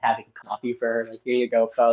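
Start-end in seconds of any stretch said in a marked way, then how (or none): none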